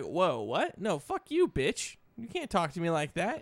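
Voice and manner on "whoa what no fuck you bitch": plain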